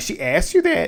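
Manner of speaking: incredulous, high, squeaky.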